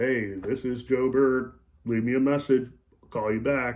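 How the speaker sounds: really slow, unhurried, drawn-out delivery. Demonstrating a slow talker's voicemail greeting, talking really slow. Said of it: "If they talk really slow".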